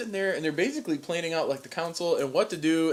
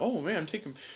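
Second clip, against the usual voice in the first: mock flattered tone, quieter; 6 dB quieter than usual. Retelling how a character reacts to an offer: imitating a flattered character. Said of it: "he's so flattered".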